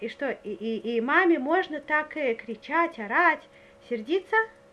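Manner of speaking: normal talking voice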